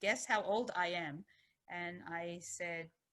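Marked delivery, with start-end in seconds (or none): 0.0-1.2 strong put-on German accent, very heavy. Retelling what a woman at a nursing home talk asked, in a very heavy german accent. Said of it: "in a very heavy German accent".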